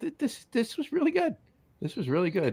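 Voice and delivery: surprised, very high, hushed, voice shooting up. Talking to a companion about a beer being tasted; voice jumping way up. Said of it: "You went up three octaves on that".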